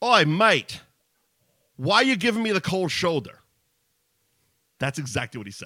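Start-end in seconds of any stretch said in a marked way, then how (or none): 0.0-3.4 loud, high put-on Australian accent. Retelling what an Australian man said in the speaker's ear, put-on Australian accent. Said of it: "He has an Australian accent".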